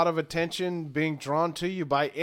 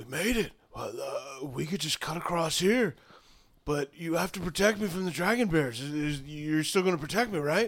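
close, secretive half-whisper right at the ear; 3 dB quieter than usual. Voicing a character in a role-play who comes up to your ear, half-whispering. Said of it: "he just whispers to you".

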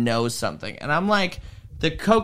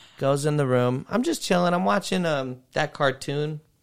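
usual speaking voice

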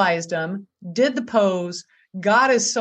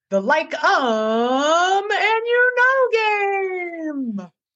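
very high, slow, drawn-out radio-host announcer voice; 10 semitones higher than usual. Introducing the killer filler word game in a radio host voice. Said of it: "I like to always do the radio host voice".

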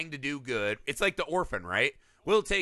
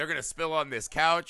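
ordinary talk

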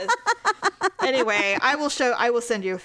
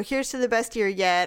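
ordinary talk

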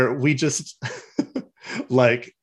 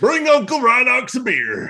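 very high character voice with pitch swooping around; 11 semitones higher than usual. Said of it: "Rhinox doesn't sound like that".

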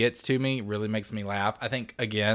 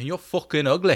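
higher-pitched fake Irish accent; 5 semitones higher, 4 dB louder than usual. Retelling the same scene, the character's rude reply: imitating an irish accent. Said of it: "You gotta use the accent".

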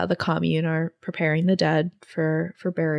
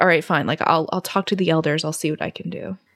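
usual speaking voice

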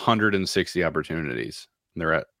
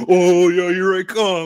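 very high, drawn-out, half-hearted sarcastic skater drawl; 13 semitones higher, 7 dB louder than usual. Voicing a slow skater's imagined thoughts: mock sarcastic player voice. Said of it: "It looks like he's skating sarcastically".

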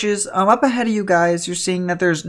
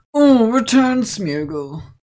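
put-on depressed voice, higher; 3 semitones higher than usual. Voicing Noah as his Smeargle faints in battle: depressed Noah voice. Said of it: "How depressed is this Noah?".

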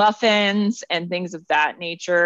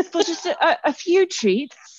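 put-on British pet voice, much higher; 10 semitones higher than usual. Voicing the animal Ginger, in a British accent. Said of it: "I feel like maybe she is".

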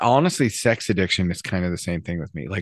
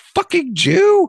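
very high, shrill scream at full lung; 8 dB louder than usual. Retelling what a guy on public transportation screamed: imitating someone screaming. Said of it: "at the top of his lungs screams".

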